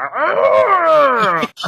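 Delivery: high, loud monster scream. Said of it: "And then the monster scream, go".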